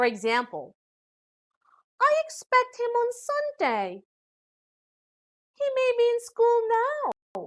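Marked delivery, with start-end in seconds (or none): 2.0-7.5 high rising tune, sounding unsure. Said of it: "When we speak of uncertain situations".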